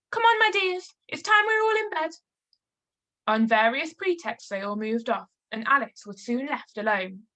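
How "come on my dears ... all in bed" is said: quavering, trembling, very high calling voice. Narrator reading the canary calling to its children, trembling voice. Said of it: "called out in a trembling voice".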